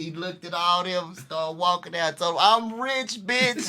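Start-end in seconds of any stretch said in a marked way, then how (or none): 2.4-3.7 high, comic stand-up punchline delivery. Retelling a player walking out after opening his check: Dave Chappelle "I'm rich, bitch" bit. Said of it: "Dave Chappelle".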